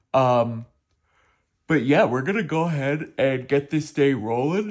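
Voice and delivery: words spoken while yawning. Vlogger starting a day-in-the-life video just after waking up, yawning while talking. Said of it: "Sorry, I'm yawning".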